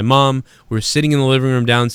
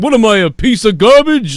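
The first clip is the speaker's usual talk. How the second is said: put-on puppet alien voice, higher and louder; 9 semitones higher, 6 dB louder than usual. Remembering the sitcom Alf with friends, imitating Alf. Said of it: "whatever the fuck he would say".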